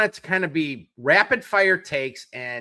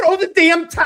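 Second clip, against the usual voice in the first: very high, loud screaming shout; 13 semitones higher, 7 dB louder than usual. Retelling watching the game like Duke in Rocky Four: imitating himself screaming. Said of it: "I kept screaming".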